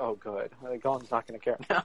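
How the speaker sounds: normal talking voice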